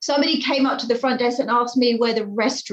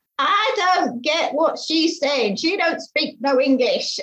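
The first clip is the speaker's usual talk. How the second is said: blunt, raised-pitch aside; 5 semitones higher than usual. Retelling a hotel caller's remark to his wife: imitating a man saying it loudly. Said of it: "he says really loudly".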